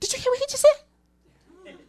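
squeaky, very high voice. Speaker retells how Josh reacted to a man's remark, imitating Josh's high-pitched voice. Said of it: "you could hear his voice go up two octaves".

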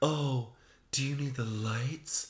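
put-on sexy, flirty, come-hither voice. Imitating how a woman talks to everyone: put-on sexy voice. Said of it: "why are you using your sexy voice?".

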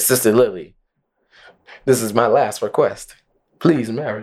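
usual speaking voice

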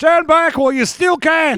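fake Australian accent, very high and loud. Acting out a scene line like an Australian guy: put-on Australian accent. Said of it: "that sounds like an Australian guy that says that".

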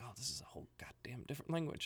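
quick, quiet whisper.

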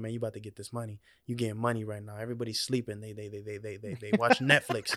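whispered voice. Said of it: "I'm whispering, like, affirmations to myself".

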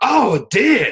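fake Australian accent. Retelling a man's reaction on learning the meat was deer, bad australian accent. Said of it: "My Australian accent's very bad".

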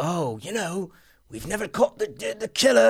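put-on full, all-in British accent. Quoting a character's repeated line from a movie: full British accent. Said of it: "I'm doing a full British accent".

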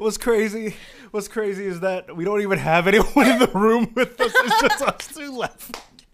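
loud, high speech bubbling through laughter. Two hosts alone in the room, unable to stop laughing: laughing while talking. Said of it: "I can't stop laughing".

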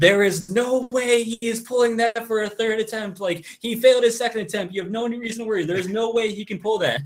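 very high, shrill, all-out screaming. Retelling what a man nearby screamed at a lift, imitating a man screaming. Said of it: "like really like screams".

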